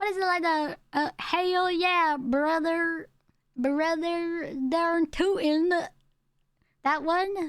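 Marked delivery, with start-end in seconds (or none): 1.2-5.7 heavy put-on southern accent, slow, deep drawl. Showing the deep southern accent that people have presumptions about: deep southern accent. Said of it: "Deep southern accents".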